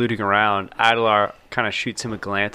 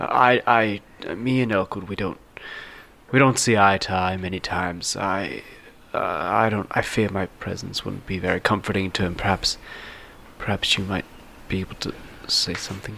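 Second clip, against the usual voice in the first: whispering quietly; 2 semitones lower, 3 dB quieter than usual. Voicing a character consoling another after a lost battle: whispering quietly. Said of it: "he kinda whispers quietly".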